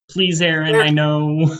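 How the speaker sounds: mock coaxing, begging, pleading tone. Retelling how one person begs another to act: imitating begging. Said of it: "kind of begging".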